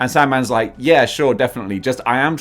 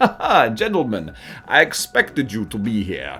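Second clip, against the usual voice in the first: put-on Transylvanian accent, sing-song and swooping; 3 semitones lower than usual. Retelling how Doc Ock greets visitors at the warehouse, play Doc Ock in a Transylvanian accent. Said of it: "I'm doing a Transylvanian accent now".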